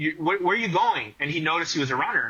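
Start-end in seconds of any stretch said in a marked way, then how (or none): 0.0-1.1 acted-out mock yelling. Telling a story, acting out what someone yelled at a runner: retelling a yell. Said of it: "he yelled at the guy".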